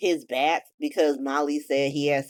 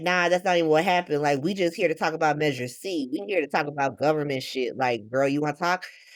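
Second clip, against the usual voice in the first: usual speaking voice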